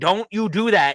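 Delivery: put-on yelling. Retelling yelling at a movie character on screen: imitating yelling at the screen. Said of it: "Now suddenly I'm yelling".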